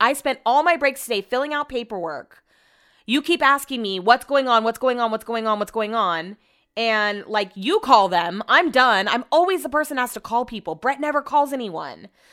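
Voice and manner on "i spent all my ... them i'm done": usual speaking voice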